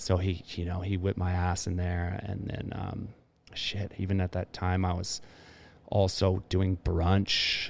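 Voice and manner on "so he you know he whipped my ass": plain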